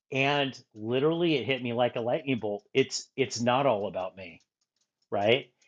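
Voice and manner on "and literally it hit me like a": plain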